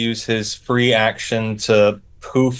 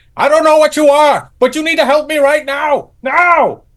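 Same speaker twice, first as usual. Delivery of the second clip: very high, loud shrieking scream; 6 dB louder than usual. Voicing a fleeing character who screams at a little idol for help: character screaming at an idol. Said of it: "as he screams at this little idol".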